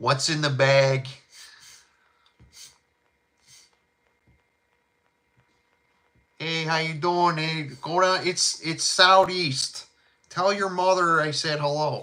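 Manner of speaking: thick, laid-on Chicago accent. Showing off the accent he says he has: heavy South Side Chicago accent. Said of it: "I have a heavy South Side accent".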